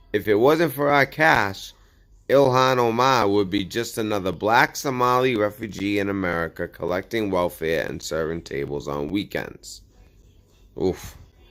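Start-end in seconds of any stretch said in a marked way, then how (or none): none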